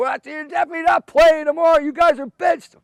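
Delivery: very high, shrill, loud screeching scream. Retelling how a man screamed at them after a motorcycle wheelie, imitating someone screaming. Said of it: "then he's screaming".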